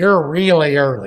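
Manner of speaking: loud, terrible put-on Yankee accent. Retelling how a man greeted him, arriving early for an interview, terrible Yankee accent. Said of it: "in this terrible Yankee accent".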